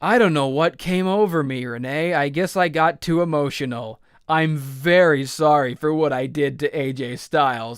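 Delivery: put-on dripping sarcasm, insincere tone. Retelling a wrestler's interview answer, imitating Shinsuke Nakamura's sarcasm. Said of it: "being really sarcastic".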